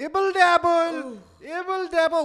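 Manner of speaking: put-on, exaggerated Indian accent, very high and loud. Part of a favorite comedy bit; mock Indian accent. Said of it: "make fun of an Indian accent myself".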